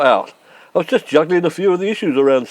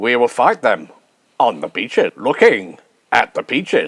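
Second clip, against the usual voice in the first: deep, grave, speech-making voice with gravitas; 7 semitones lower than usual. Trying to sound deeper and more manly with gravitas: Winston Churchill impression. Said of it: "like Winnie, Winston Churchill".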